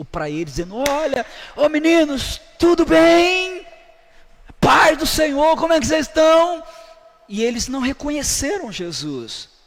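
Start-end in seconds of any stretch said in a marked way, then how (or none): 0.9-6.6 very high, loud, drawn-out call, acted out. Retelling a call from the shore to people in a boat: imitating a shout from shore. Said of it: "gritando com eles".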